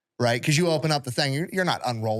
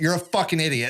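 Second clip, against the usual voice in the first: acted angry sergeant yelling, higher; 4 semitones higher than usual. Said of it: "yelling at him".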